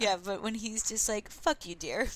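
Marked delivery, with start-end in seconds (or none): 1.3-2.1 acted, strained calm, gentle and loving. Retelling a film scene where a father insults a mother: imitating a forced calm tone. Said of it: "They're trying so hard to be calm".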